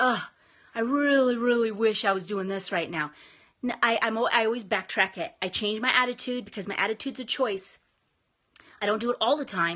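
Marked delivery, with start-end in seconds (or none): none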